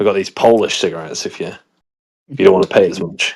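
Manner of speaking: secretive, hushed, low murmur. Telling Peter how UK shop staff offer cigarettes, retelling a hushed offer. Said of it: "in a hushed voice say".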